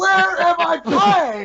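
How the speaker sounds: very shrill, very high, very stretched-out yell. Retelling a tournament meltdown: imitating Dark Side Phil yelling. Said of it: "yell like that".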